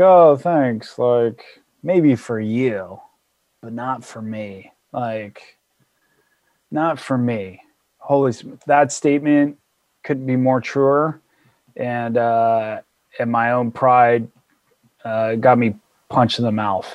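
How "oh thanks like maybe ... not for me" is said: put-on smug tone, lower and quieter. Retelling his reply to someone's advice about transition, mock-smug. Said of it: "I kind of like smugly like".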